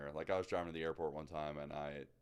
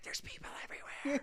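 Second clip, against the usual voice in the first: hushed whisper under the breath. Retelling the caller's whispered answer about people everywhere: imitating someone whispering. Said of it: "Why are you whispering?".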